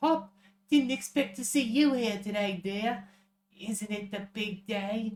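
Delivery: put-on high Australian accent. Voicing a character greeting Hop on the big day, Australian accent. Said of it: "That's your Australian accent?".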